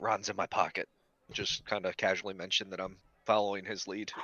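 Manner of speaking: ordinary delivery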